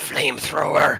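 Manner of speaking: rough, snarling cry. Game master voicing a character with a mechanical arm, snarling. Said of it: "and he snarls".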